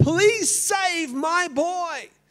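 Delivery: very high-pitched, very slow, drawn-out, loud scream. Retelling a mother's cry from the street during a fire: imitating a mother screaming. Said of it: "screaming from the streetscape".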